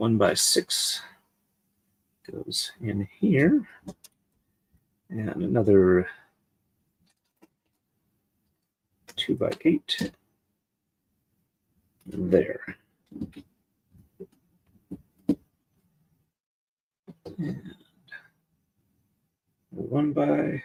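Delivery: hushed, absorbed, distracted half-whisper. Assembling pieces and saying aloud where each one goes, half-whispering. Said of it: "Hope I'm not whispering too quietly".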